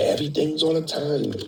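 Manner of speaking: whispered words. Telling a story, the speaker repeats what the guy said to him: retelling a whisper. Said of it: "and he just whispered".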